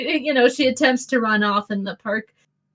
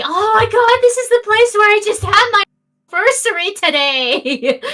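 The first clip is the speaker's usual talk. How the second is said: put-on very high, shrill, loud, weepy, gushing drunk woman; 9 semitones higher, 3 dB louder than usual. A drunk woman stumbles up to the group, drunk woman voice. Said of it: "And over there stumbles the drunk woman / And over there stumbles the drunk woman oh God! from Oh no! from the [name], and she's like, "You guys, I was looking for you everywhere. I'm sorry, but I hea".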